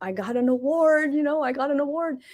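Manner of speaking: put-on Filipino accent. Retelling a sister's phone call about an award, imitating sister's Filipino accent. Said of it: "She'll even say it in this way".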